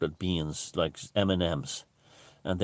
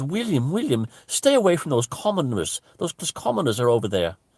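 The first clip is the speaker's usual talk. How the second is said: put-on loud posh South Dublin accent, high, swooping; 9 semitones higher, 6 dB louder than usual. Retelling a woman overheard while camping, calling to William, in a posh South Dublin accent. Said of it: "go in a posh voice, South Dublin, County Dublin voice".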